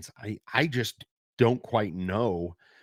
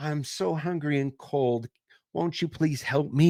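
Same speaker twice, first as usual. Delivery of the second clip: put-on eerie, creepy, high-pitched small-child voice; 5 semitones higher than usual. Telling a scary story, the speaker voices the boy outside the tent in a creepy little kid voice. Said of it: "this creepy little kid voice".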